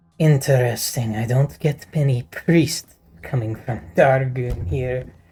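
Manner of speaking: put-on voice of a goblin woman. Voicing a goblin woman welcoming a new customer: goblin woman voice. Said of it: "a goblin woman sitting down".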